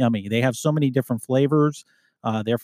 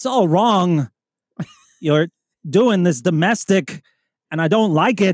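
higher-pitched put-on voice, sounding strained as if constipated; 6 semitones higher, 4 dB louder than usual. Acting out an arrest over a domestic, do a constipated-sounding Christopher Walken impression. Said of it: "You sound constipated".

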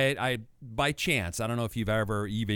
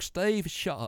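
put-on high, bad British voice-assistant accent; 7 semitones higher than usual. Imitating the phone assistant talking back: British Siri voice. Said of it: "my Siri is a British woman".

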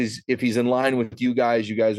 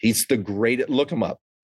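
ordinary talk

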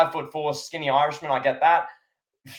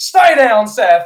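very loud, high-pitched screaming yell; 7 semitones higher, 10 dB louder than usual. Retelling a commentator yelling at a wrestler on the ground: imitating Michael Cole yelling. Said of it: "Michael Cole's yelling in his face".

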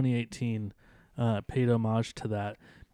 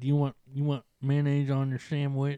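put-on country woman's accent, slower; 2 semitones higher than usual. Describing a movie scene, imitating the old woman in a put-on country accent. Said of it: "She sounds so country".

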